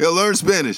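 loud, high, emphatic voice. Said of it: "I believe in this heavily".

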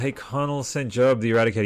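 ordinary delivery

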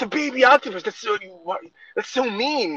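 appalled, horrified outcry pitched very high. Retelling the kids' reaction to eating octopus: imitating horrified kids. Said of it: "they're horrified".

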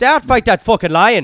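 very loud, very high put-on Irish accent. Acting out an Irish brawler fighting a lion: put-on Irish accent. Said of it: "you're fucking dominating that accent".

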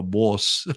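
"boss" said with a New York accent. Showing how they say a word, New York accent on boss. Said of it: "that's the New York accent".

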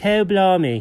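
put-on British accent. Showing that a word sounds better: fake british accent. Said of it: "you say it with a fake British accent".

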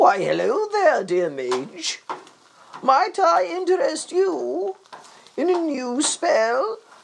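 stretched out and very high-pitched. Imagining a character suddenly appearing to a mage, Dungeon Master voice. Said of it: "I'm imagining like a dungeon master".

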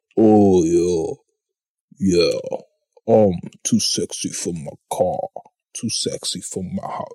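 slow, deepened low voice, a touch androgynous. Mimicking a woman who faked a deeper voice: imitating her deepened voice. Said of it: "I gotta deepen my voice just to mimic her".

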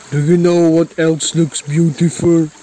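big, macho tough-guy voice. Acting out a shared story, the speaker plays Jim; macho Jim voice. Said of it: "you sound like a macho or something".

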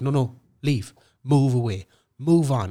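put-on yelling. Retelling telling a man at the sound booth to leave: retelling own screaming. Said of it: "And I was just screaming at him".

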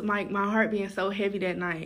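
ordinary talk

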